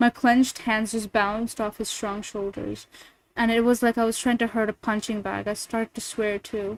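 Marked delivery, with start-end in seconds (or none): none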